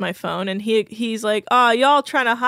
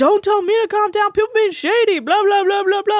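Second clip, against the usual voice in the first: mock frantic, very high, unhinged, out-of-control drunk rant; 10 semitones higher, 3 dB louder than usual. Retelling a drunk person refusing to calm down: imitating someone losing his mind. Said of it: "losing his mind".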